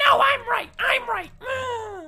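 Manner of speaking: put-on insistent, shrill girl voice, very high, loud shout.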